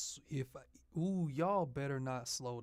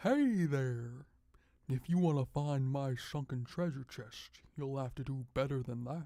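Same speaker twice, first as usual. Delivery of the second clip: loud, clumsy, poorly done cartoon fish voice; 5 dB louder than usual. Doing an impression of the fish from Digital Circus: bad Digital Circus fish impression. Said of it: "I'm not good at doing an impression for that, uh, fish from Digital Circus".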